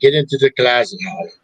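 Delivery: put-on Spanish accent speaking English. Retelling what Gabe said in a haunted room: imitating a Spanish accent. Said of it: "he's got a Spanish accent".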